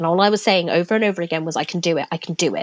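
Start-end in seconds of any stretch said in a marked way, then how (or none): 1.6-2.6 put-on sobbing, crying speech. Retelling packing for a show during a panic attack: imitating own past sobbing. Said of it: "I was shaking and I was sobbing".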